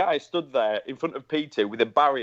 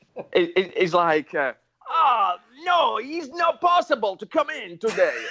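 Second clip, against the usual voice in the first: put-on Italian accent, much higher; 9 semitones higher than usual. Telling a story, quoting what a man said, in an italian accent. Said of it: "Do the Italian accent".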